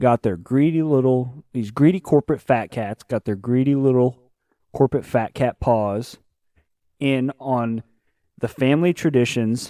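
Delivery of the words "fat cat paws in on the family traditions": ordinary talk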